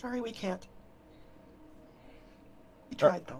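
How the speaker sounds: mumbled, muttered half to oneself under the breath. In a role-play, a character near the fairy circle, just muttering. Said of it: "I'm just kind of muttering it".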